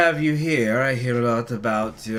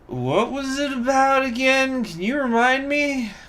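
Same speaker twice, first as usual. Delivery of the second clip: put-on slurring drunk voice, pitched high; 13 semitones higher than usual. Speaker decides to ask a question in a put-on drunk voice. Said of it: "I'm just gonna go with a drunk voice".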